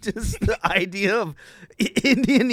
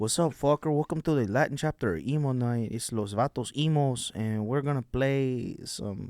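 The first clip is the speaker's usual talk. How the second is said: very low, put-on guy voice; 8 semitones lower, 7 dB quieter than usual. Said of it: "We were riffing the the Vato".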